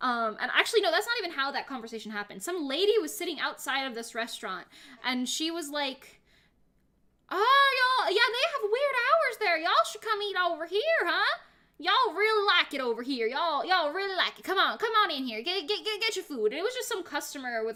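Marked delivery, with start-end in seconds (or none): 7.3-16.5 really strong put-on Southern accent, high, loud. Retelling what a customer outside a restaurant said: imitating a southern accent. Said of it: "a really Southern accent".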